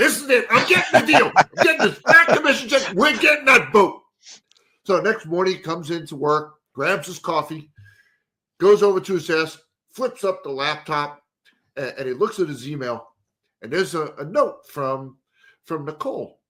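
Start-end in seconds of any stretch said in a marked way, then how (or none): 0.0-4.0 loud, high-pitched proclaiming voice. Retelling a salesman telling his wife about a deal: Ralph Kramden voice. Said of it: "all kinda sounds like Ralph Cram".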